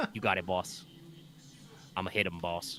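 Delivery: whispered, hushed put-on Jersey tough-guy accent. Recalling how she voiced a goon answering the boss, Jersey accent. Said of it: "I tried to do like a, a Jersey accent".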